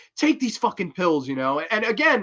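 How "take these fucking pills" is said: play-acted, exaggerated, over-the-top half-yell. Retelling a film scene where the killer yells at a girl: imitating a character yelling. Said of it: "she's yelling at Jennifer Connelly".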